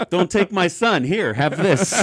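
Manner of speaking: very loud, high, attempted put-on Eastern European accent. Joking about being held in a camp, in an attempted Eastern European accent. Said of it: "lean into an Eastern European accent".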